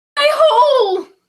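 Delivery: very high-pitched, loud, shrill shout. Doing a requested impression of Nia Jax shouting. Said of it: "it's Nia Jax shouting".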